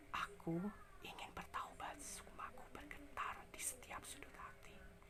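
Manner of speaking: soft, breathy, very quiet whisper with no voice. Voice training exercise practicing phrases: whispered. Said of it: "latihan dengan berbisik, contohnya dengan kata-kata seperti ini".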